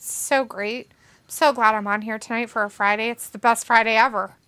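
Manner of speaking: extremely heavy, dripping sarcasm. On air on a friday night, mocking the wrestling news, very sarcastic. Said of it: "I say it as sarcastically as I possibly can".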